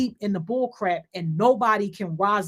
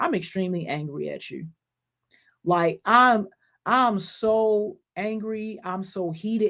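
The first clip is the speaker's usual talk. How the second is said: calmest, slow, unruffled voice. Showing how they tell people they're angry, in the calmest voice. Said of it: "in the most calmest voice".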